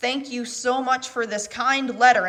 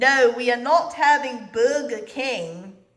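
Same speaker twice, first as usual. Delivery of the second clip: put-on stern, no-nonsense woman's voice. Doing an impression of the woman from a wild video, imitating a woman. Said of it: "here's my impression of the woman".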